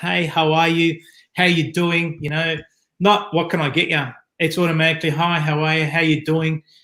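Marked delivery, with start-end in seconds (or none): 0.0-2.2 loud, slower. Showing how to greet a customer walking through the door, with a loud greeting. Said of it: "greeting them with a loud voice".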